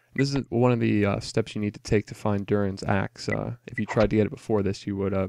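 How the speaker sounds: plain reading voice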